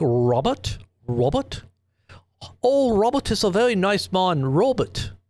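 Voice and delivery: put-on slow Australian-accented news lady voice. Recalling a past interview guest, the speaker imitates Maria's Australian accent. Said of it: "They just have that that Australian sounding".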